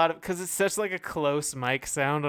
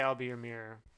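ordinary delivery

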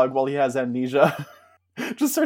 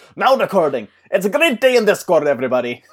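put-on Scottish accent, much higher and louder; 5 semitones higher, 6 dB louder than usual. Redoing the recording bot's announcement, as a Craig Ferguson impression. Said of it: "should have made him sound like Craig Ferguson".

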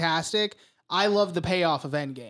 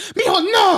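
mock very high, shrill, loud motherly scolding; 13 semitones higher, 8 dB louder than usual. Retelling a mom scolding her kid in the theater: imitating a scolding mom.

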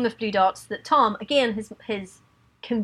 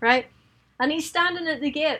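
ordinary talk, nothing marked

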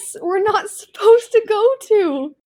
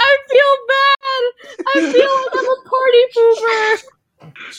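high, slow weeping through the words; 7 semitones higher, 3 dB louder than usual. During a role-playing game, a player voices Rowan: Rowan crying. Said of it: "Now Rowan is also crying".

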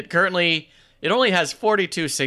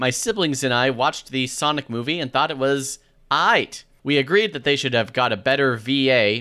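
ordinary talk, nothing marked

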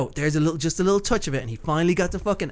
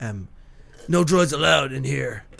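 put-on manly American western accent, much slower; 3 semitones lower than usual. Retelling a line an actor dubbed himself, in a manly american western accent. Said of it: "Manly American Western style accent".

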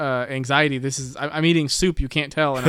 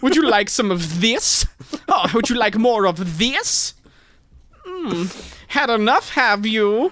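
foppish dandy voice, pitched up; 7 semitones higher than usual. Playing a fop in a fist fight, in a foppish dandy voice. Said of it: "a fop in a fist fight".

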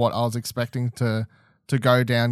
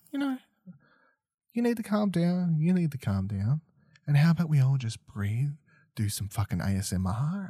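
mild, hushed, soft-spoken voice; 4 semitones higher, 6 dB quieter than usual. Speaker contrasting expectations with a character, imitating a soft-spoken father. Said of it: "this very like soft-spoken father who's like".

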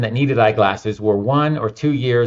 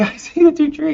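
put-on excited child scream, much higher pitch. Retelling a kid seeing the two trees, retelling a kid's excited scream. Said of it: "He was just screaming".

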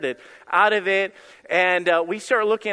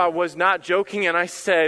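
ordinary delivery

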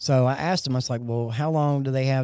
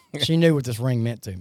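ordinary delivery

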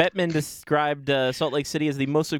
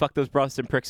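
plain

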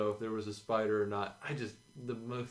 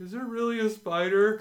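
mock shrill, high, loud terrified yell; 11 semitones higher, 8 dB louder than usual. Retelling cowering in a dark trash room after a spider prank, retelling a terrified yell. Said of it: "I yell".

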